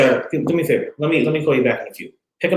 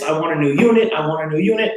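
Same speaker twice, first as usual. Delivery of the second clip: put-on angry voice, higher pitch; 4 semitones higher than usual. Retelling a customer's demand for a new unit: imitating a pissed-off customer. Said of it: "he was pissed".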